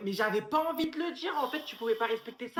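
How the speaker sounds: loud angry shouting. Arguing with someone who told what they had sworn to keep quiet; shouting. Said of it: "Pourquoi tu cries comme une tana?".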